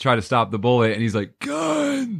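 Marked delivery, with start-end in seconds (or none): 1.4-2.2 play-acted winded, weak, failed breathless yell, very high. Retelling a movie scene where a character struggles to yell: imitating a weak, breathless yell. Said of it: "now you can't yell".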